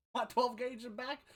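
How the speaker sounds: put-on Florida man-style accent. Playing an old man refusing help: put-on Florida accent. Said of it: "Spoken like a true Florida man".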